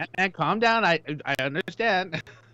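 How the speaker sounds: normal talking voice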